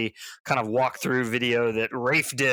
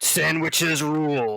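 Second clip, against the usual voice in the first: movie trailer narrator voice, higher; 4 semitones higher than usual. Joking about old movie trailers, doing the movie trailer guy voice. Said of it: "the movie guy voice".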